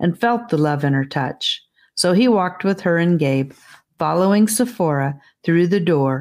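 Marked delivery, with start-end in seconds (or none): none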